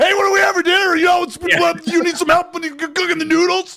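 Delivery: mock very high shout, like over a headset. Speaker showing family how they talk at home: acting out own yelling. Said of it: "you don't need to yell".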